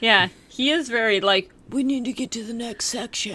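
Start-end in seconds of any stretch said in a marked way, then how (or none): 1.7-3.3 mock tough-guy voice, faster. Mocking how a movie character talks while discussing the film: imitating a tough-guy voice. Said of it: "doing like tough guy voice".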